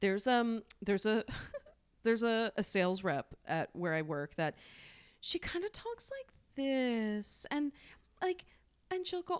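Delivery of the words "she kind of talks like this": high, slow, affected silly voice. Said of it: "very affected, um, silly voice".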